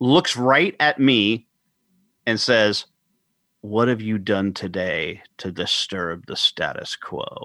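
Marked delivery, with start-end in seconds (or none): 3.6-7.5 sudden, really low, quiet confidential aside. Retelling a presenter's sudden aside aimed right at the speaker, in a really low voice. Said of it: "in a really low voice".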